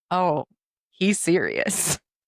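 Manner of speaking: slow, drawn-out, deadpan, insistent delivery. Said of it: "And I said".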